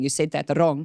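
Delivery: ordinary talk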